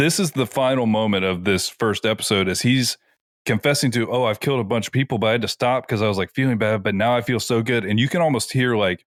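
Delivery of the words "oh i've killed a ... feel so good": ordinary delivery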